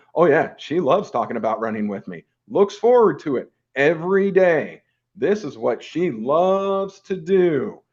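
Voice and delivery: laid-on-thick, heavy sarcastic tone. Saying his wife loves talking about running with him: thick sarcasm. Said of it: "picking up the sarcasm?".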